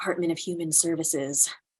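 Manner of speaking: soft, hushed voice, half whispered. Asked where they are headed, a character answers: half-whispering. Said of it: "Why are you whispering?".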